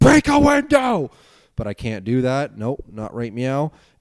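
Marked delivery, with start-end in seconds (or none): 0.0-1.1 loud, high-pitched yelling. Speaking to the folks, acting out the persona locked in the vault: put-on Angry Tim voice. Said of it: "Angry Tim is um is gone this week".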